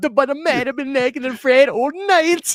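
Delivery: put-on Jamaican accent. Quoting a favorite line to a buddy, the speaker uses a Jamaican accent. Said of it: "the best Jamaican accent I've ever heard".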